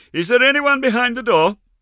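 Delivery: very loud, high-pitched, forced brave shout. A narrator reads a girl forcing herself to show courage, calling very loudly. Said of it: "said very loudly".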